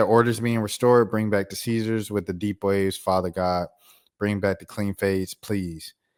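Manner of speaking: ordinary talk, nothing marked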